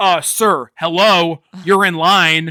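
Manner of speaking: put-on rude voice. Retelling a movie scene, quoting the cashier: imitating a rude cashier. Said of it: "is so rude, and he goes".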